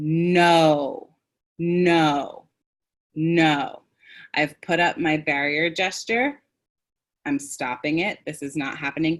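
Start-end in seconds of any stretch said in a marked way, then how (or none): 0.0-3.8 each "no" firm, with long stretched o. Teaching how to stop someone's escalating tone, a speaker demonstrates; stretched O vowel, firm no. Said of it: "when I say no".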